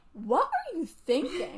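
unfiltered, honest inner-voice tone, swooping pitch. Acting out how the question sounds in her head: put-on honest inner reaction. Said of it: "internally, it would sound like".

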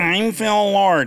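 mock nerd voice, nasal, slow and high.

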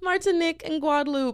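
very high-pitched put-on American accent.

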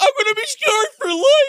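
very high, loud, whiny wail.

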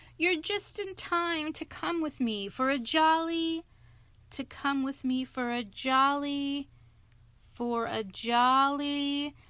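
cheery, hearty, jolly voice, faltering, fading, drawn-out. A man greets his silent friends with an invitation; hearty voice faltering away. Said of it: "His hearty accents faltered and fell away".

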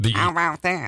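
put-on duck-like voice. Trying out different voices one after another, duck-like voice. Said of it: "It sounds kind of like a duck thing".

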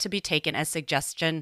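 ordinary delivery

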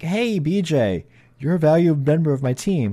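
slow, glib, corny, tongue-in-cheek sarcastic delivery. Retelling a running inside joke: mock sarcastic, glib delivery. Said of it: "kind of a sarcastic, glib, corny way".

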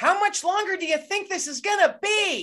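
put-on piercing, very high-pitched sharp yell. Retelling calling out during a long scan: imitating own past yell. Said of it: "I literally yelled".

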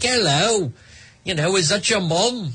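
fake put-on British English accent. Retelling how local band members walked into a nightclub: put-on english accent.

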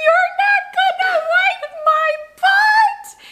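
very high, very slow, tearful crying wail. Speaker acting out a small boy at the bathroom stall, retelling a tearful yell. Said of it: "He yells out loud with like tears in his eyes".

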